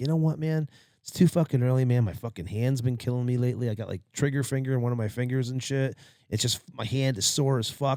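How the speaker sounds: plain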